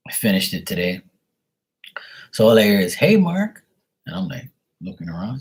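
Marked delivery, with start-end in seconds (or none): 2.9-3.6 put-on very high-pitched hollering voice. Retelling how the neighbor called out: imitating the neighbor hollering. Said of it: "all hollering at me".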